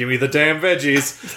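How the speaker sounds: dead serious, flat, level, no-inflection deadpan. Retelling a movie scene, quoting the character's reply: Luke Hobbs no-inflection delivery. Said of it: "He just says it with no inflection whatsoever".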